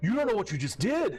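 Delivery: angry shouting in a put-on voice. Voicing a red-faced young man yelling in someone's face: yelling angrily in character. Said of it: "just ran up on you and is yelling at you".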